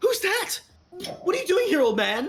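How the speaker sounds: piercing, shrill, very high elf voice. Narrating a game scene, an elf calls out to an old man: shrill elven voice. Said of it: "you hear a shrill elven voice call out".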